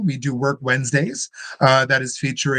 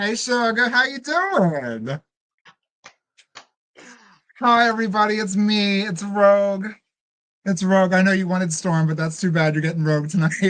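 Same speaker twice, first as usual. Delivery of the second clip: high, showy, pitched-up drag queen voice; 7 semitones higher than usual. Coming onstage as Rogue and greeting everybody: Rogue voice. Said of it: "I give to you Rogue".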